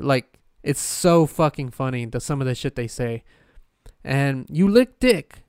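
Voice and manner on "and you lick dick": clumsy, bad, fake Indian accent. Speaker mimicking people who misuse English, bad Indian accent. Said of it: "That was my attempt at an Indian accent".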